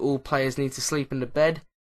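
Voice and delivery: ordinary talk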